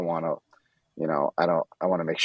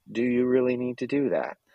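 put-on nice, courteous British accent, pitched high; 7 semitones higher than usual. Imitating a reminder that plays when you open another tab: nice british voice. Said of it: "a nice British voice".

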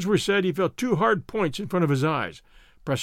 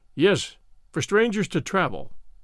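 ordinary delivery

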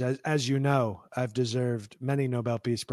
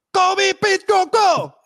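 very high, loud, belted fake Vietnamese accent; 12 dB louder than usual. Retelling what a man said when they met, in a put-on Vietnamese accent. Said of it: "Your Vietnamese sounds a little Chinese".

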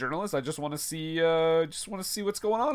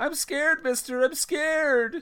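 very high, frightened, scared yelling cry; 10 semitones higher than usual. Recapping a scene, the speaker acts out Itchy's scared yell. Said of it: "itchy itchy yells out like".

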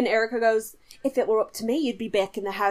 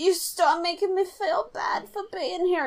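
put-on drunk crying voice, higher pitched; 6 semitones higher than usual. Retelling a drunk phone call to a fiancé: imitating Simone drunk crying. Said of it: "Simone is blackout drunk crying on the phone".

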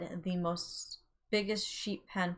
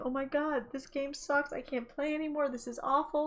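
play-acted, high, teary lamenting voice; 8 semitones higher than usual. Retelling a game where all their animals exploded, imitating being in tears. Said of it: "I'm in tears at this point".

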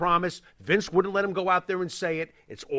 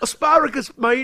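put-on British accent, louder; 7 semitones higher, 5 dB louder than usual. Joking about british food, say it in a mock british accent. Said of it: "British meatloaf".

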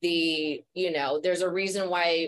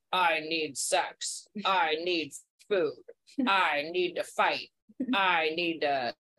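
slow, basic, bare-bones primitive brain voice. Speaker explaining the parts of the brain, primitive brain impression. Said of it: "I like your impression of it".

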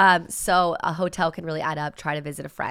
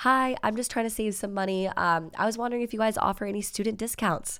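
sugary, extra sweet, super-nice polite voice; 4 semitones higher, 4 dB quieter than usual. Showing how to ask a hotel for a student discount: imitating a really nice voice. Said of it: "Really nice voice".

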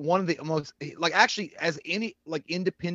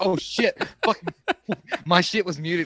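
put-on flustered panic, words tumbling out fast; 4 dB louder than usual. Teasing a call partner about being muted, imitating their panic voice. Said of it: "I heard you do that panic voice".

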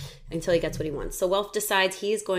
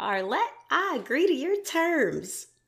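attempted put-on country accent; 9 semitones higher than usual. Retelling what a man tells a woman, in an attempted country accent. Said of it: "I can't do a country accent".

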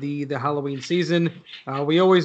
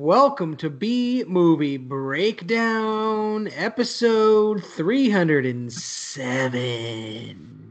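eerie, haunting, spooky demon voice. Opening a podcast episode, in a spooky voice. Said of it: "That's my spooky voice".

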